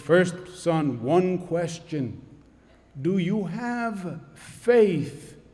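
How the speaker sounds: slow, deliberate God voice from above. Telling a joke, voicing the voice that questions a desperate man, loud booming divine voice. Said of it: "There's a loud, booming voice".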